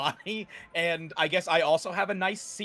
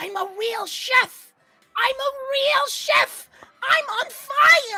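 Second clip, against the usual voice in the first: very high, very loud, shrill, drawn-out rat squeak; 8 dB louder than usual. Eyes glinting in the flames, speaker murmurs in a little ratty voice. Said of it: "in a little ratty voice".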